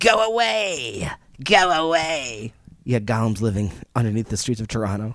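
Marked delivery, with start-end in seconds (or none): 0.0-2.5 very slow, high, hissing creature voice. Reacting to a story about a creature that said go away, speaker voices it: hissing creature voice. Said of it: "in a hissing voice".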